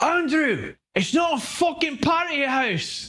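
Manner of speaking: put-on thick Scottish accent. Retelling a dad's words when he came down one night: heavy Scottish accent. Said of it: "heavy, but easy to understand Scottish accent".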